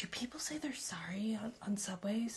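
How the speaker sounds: soft, voiceless whisper.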